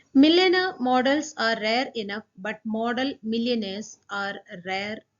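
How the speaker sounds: ordinary talk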